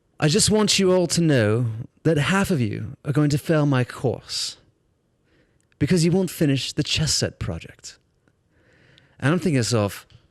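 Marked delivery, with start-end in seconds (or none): 0.2-8.0 put-on Welsh accent. Retelling a teacher's first words to a class: imitating a Welsh accent. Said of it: "he's got this Welsh accent".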